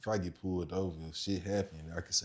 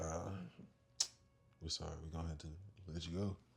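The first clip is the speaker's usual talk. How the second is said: very soft, hushed, sad, defeated voice; 3 semitones lower, 12 dB quieter than usual. Retelling how the people who searched his car let him go: imitating a sad apology. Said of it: "Why you sound sad?".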